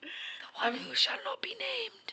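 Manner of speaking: put-on slow, breathy, wheezing whisper. Talking about watching Harry Potter, quoting a line from it, wheezing voice. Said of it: "Did you hear the wheezing in my voice?".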